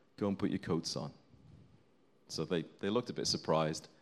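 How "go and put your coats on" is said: very quiet, hushed, softly spoken voice. Speaker retells what they said to people waiting to be told off, very quietly. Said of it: "very quietly".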